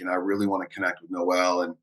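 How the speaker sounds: ordinary talk, nothing marked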